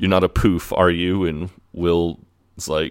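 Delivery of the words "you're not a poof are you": plain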